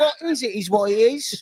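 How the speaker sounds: high, put-on South Jersey accent. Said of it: "Oh, South Jersey".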